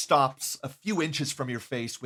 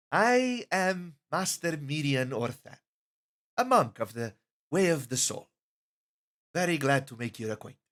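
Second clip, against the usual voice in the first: easygoing, friendly, relaxed, welcoming tone. Narrator voices the second monk introducing herself; relaxed, welcoming Mirian Orthan. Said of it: "Her energy is a bit more relaxed".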